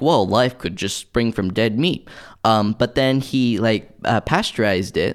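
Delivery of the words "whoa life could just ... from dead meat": normal talking voice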